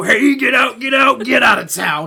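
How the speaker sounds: loud, high-pitched holler, yelled in character. Imitating the Grinch waving his fingers in your face: Grinch voice. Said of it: "you hear the Grinch go".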